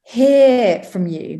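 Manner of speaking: "hear" stretched out. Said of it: "I emphasize the word hear".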